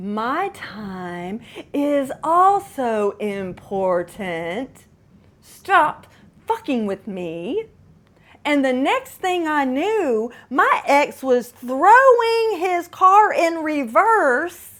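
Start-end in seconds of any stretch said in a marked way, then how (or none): 0.0-7.6 soft, hushed stage whisper. Retelling leaning in to speak to an ex: retelling a half-whisper. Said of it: "I whisper".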